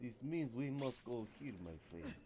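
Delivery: put-on, joking Russian accent played for fun. Reacting to someone getting Victor, in a put-on Russian accent. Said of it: "I don't know why I'm doing the Russian accent".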